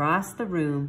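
plain

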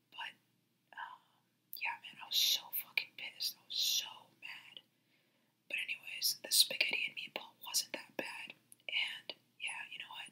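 quiet whispering. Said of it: "I'm not gonna talk like this anymore".

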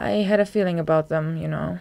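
ordinary delivery

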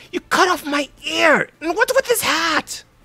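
furious, very high, angry yell. Voicing a wounded woman who wakes up bandaged: shouting in character. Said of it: "and she shouts".

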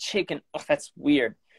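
normal talking voice

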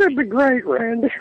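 very high woman's voice. Showing how you were asked to do it, answer Randy in a Miss Elizabeth voice. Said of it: "they would ask you to do it as Miss Elizabeth".

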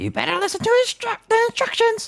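squeaky mushroom character voice. Voicing the teacher in the game dialogue: Toad voice. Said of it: "I'm making Slowly turn into Toad".

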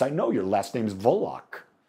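imitated Polish accent. Quoting a woman from a conversation, imitating a polish accent. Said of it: "she said it in a Polish way".

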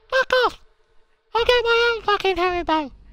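put-on squeaky voice. Recalling being told off over Haribo, doing a squeaky Mr. Muscle voice. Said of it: "Told me to fuck off in a squeaky voice".

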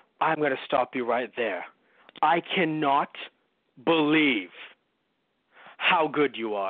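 parody drama, pausing dramatically at every phrase. Recounting an actor's parody performance, imitating his dramatic pauses. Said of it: "just fucking pauses for everything".

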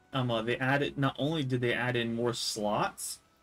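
plain

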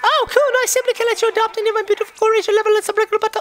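silly character voice, very high, fast, squeaky.

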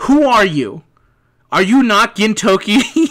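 loud, angry yelling. Quoting a character confronting Gintoki: Shinpachi yelling. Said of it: "when he's yelling at him".

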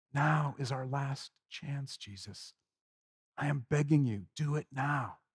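very quiet, low, begging, pleading half-whisper. A narrator voices Judas as he kisses Jesus, half-whispering in his ear. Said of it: "kissing Jesus and whispering in his ear".

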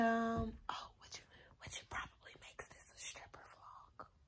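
very soft unvoiced whisper under the breath.

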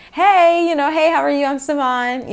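bright, bubbly, high and chipper. Speaker retelling greeting people on a set, putting on a chipper voice.

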